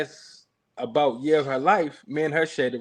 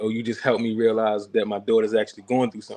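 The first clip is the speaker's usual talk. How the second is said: put-on tearful crying voice, lower; 4 semitones lower than usual. Retelling what the therapist said in a session: imitating someone crying. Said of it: "And she started crying like".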